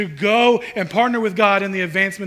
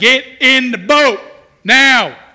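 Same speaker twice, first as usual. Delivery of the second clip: booming, drawn-out stern dad voice, very loud and slow; 5 semitones higher, 8 dB louder than usual. Retelling Jesus telling his disciples to get in the boat, in a dad voice. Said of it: "This is that dad voice".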